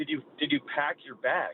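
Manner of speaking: put-on dead-serious, heartfelt, earnest tone. Retelling a pickup basketball game joke, imitating Stacy, so sincere. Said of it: "comes up to me and so sincere".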